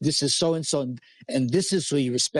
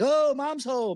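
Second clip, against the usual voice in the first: put-on very high-pitched child voice calling out; 11 semitones higher than usual. Retelling the kids greeting mom coming home: imitating a kid yelling. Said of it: "start yelling".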